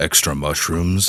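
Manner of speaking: tough, hard voice. Asking about pizza toppings, the speaker tries to sound like a badass. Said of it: "while sounding like a badass".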